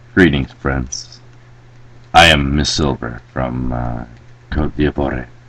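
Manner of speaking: very quiet, low, hushed half-whisper. Reading a letter from miss silver aloud to the others: half-whispering. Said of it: "Why are you whispering?".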